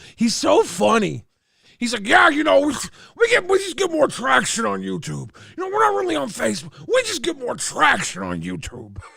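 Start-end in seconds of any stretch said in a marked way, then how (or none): 2.1-9.0 put-on old-timer grandpa voice, high and quick. Describing a man at the docks who talks like a grandpa, imitating a grandpa. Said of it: "He talks like a grandpa".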